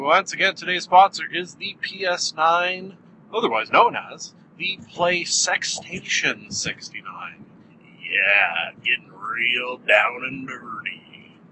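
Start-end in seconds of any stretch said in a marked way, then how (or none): 3.3-11.2 low, put-on dirty old man voice. A podcast host reads out the sponsor, in an old dirty man voice. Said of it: "That's my old dirty man voice".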